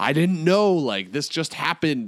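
loud yelling.

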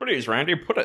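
put-on elderly voice. Imitating a character from a show pleading with Randy: elderly voice. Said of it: "Elderly, not Jimmy Stewart".

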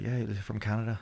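put-on New Zealand accent. Retelling what his mom said on the phone: bad new zealand accent. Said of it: "worst New Zealand accent I've ever heard".

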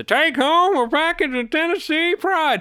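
put-on hillbilly voice. Recalling the drawing on the Tennessee Pride label: slurred Tennessee Pride hillbilly voice. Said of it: "a little hillbilly who says in a very slurred, almost like he's got some chaw in his lip".

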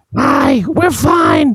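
very high-pitched put-on woman's voice. Acting out a suspect faking a woman's voice to the police: put-on woman's voice. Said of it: "by imitating a woman's voice".

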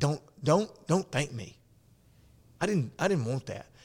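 play-acted distressed, upset, near-emotional pleading. Retelling an old veteran's reaction to being thanked: imitating an upset, emotional man. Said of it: "he got real upset".

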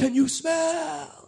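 high, slow, whispery put-on impression voice.

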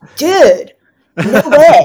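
loud, high-pitched Southern California dude speech. Showing how growing up in an LA beach city sounds: showing own LA way of talking. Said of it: "when I hear myself talk".

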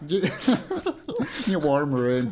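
put-on slow, laughing Northern Irish accent. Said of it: "I've gone a bit Northern Irish".

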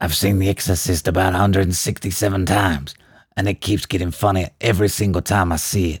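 put-on voice with a light gruffness. Acting out a film quote for a guessing game: gruff put-on voice. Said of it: "A little bit gruff".

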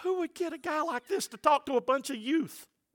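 hushed, soft, high half-whisper under the breath. Retelling a remark to his wife during a service: retelling own half-whisper. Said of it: "I'm whispering to my wife".

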